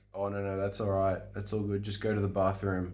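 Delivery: normal talking voice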